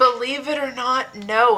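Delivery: put-on whispery tone. Repeating what another speaker said to everybody: imitating a whispery tone. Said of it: "in a very whispery tone".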